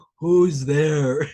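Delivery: very loud, extremely deep, booming troll voice. Afraid of a noise coming towards him during meditation, calling out in deepest troll voice. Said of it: "in my deepest troll voice".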